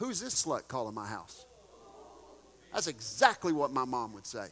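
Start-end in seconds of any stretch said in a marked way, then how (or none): 0.0-1.5 low, swooping aside meant to carry. Recalling mom answering a girl's call to the house: retelling mom's covered-phone aside. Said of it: "put her hand over the phone barely because she wanted it to be heard".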